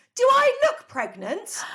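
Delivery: shouting. Retelling a confrontation with a man who thought the speaker was pregnant, retelling a shout. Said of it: "I shouted".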